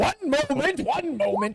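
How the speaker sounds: put-on gruff old man voice. Narrator voices an old elf wood carver answering a banging door: gruff old man voice. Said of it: "You hear the gruff voice of the old man".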